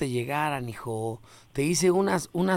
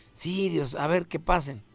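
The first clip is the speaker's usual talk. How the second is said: ordinary delivery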